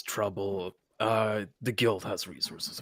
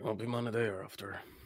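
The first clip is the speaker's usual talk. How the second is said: barely audible, hushed half-whisper muttered under the breath; 6 dB quieter than usual. Voicing a character who answers a warning: half-whispering under his breath. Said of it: "He whispers under his breath".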